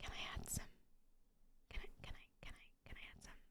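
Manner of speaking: speaking in a whisper. Adjusting the audio gain settings and asking if more can be added: whispering. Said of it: "why am I whispering?".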